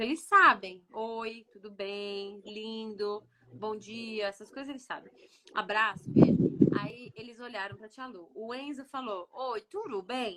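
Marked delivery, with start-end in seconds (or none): 9.3-10.4 put-on Portuguese spoken with a strong, heavy American accent. Retelling how Enzo greeted his aunt in Portuguese, imitating Enzo's strong American accent. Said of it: "Com o sotaque bem americano".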